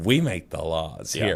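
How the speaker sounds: soft, smug, self-satisfied, authoritative, acted-out bossy voice. Retelling what an official said with a grin: imitating someone speaking with a grin. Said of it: "this guy stood there with this little grin on his face".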